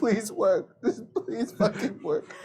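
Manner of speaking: mock crying, pleading voice. Acting out a character crying on the toilet: imitating someone crying. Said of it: "him just crying on the toilet".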